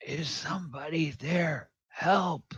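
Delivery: feeble, faint, weak voice, pitched high. Narrating a rattling door, a voice calls from behind it: weak voice. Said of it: "you hear sort of a weak voice".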